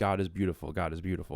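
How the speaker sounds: mumbled, muttered under the breath. Retelling a stressed man at the grocery store loading his trunk: imitating a man muttering under breath. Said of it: "saying under his breath".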